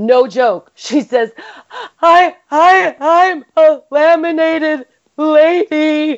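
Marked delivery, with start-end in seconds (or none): 2.0-6.2 high, very slow, tearful words between sobs. Retelling what a bawling woman said between sobs, imitating her sobbing. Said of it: "In between sobs".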